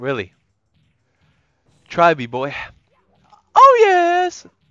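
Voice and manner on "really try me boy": put-on brash, loud, cocky tone. Answering the boss in a taunt, acting cocky. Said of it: "I'm like".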